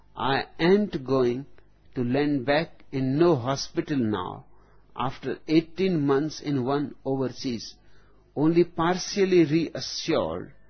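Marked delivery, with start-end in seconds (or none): none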